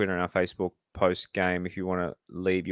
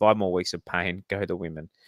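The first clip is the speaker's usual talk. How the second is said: usual speaking voice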